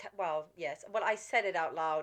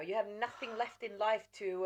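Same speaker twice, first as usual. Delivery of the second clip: usual speaking voice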